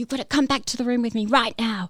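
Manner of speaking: loud shout. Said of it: "he's just yelling at me".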